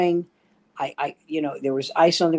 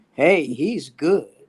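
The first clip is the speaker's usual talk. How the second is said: put-on Southern US accent. Doing an impression of an audience member at Southern comedy clubs. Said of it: "my impression of every audience member at Southern comedy clubs".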